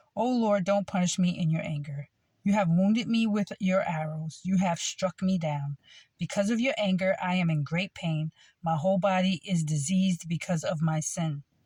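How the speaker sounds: ordinary talk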